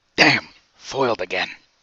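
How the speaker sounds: grumbled aside, to oneself. Voicing a character who mutters after being foiled: muttering under his breath. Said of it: "under his breath".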